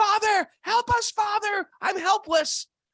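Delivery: high, loud screaming. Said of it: "everybody was screaming".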